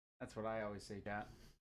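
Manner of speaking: ordinary talk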